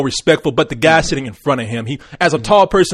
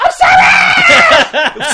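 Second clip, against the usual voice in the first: shrill scream, very high, loud and swooping; 6 dB louder than usual. Joking about waking up at night: mock screaming. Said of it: "I wake up screaming".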